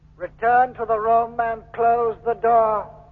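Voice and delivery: dull, lifeless, expressionless flat monotone. A hypnotized man ordering the captain back to the room: dull, expressionless voice. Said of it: "That same dull, expressionless voice".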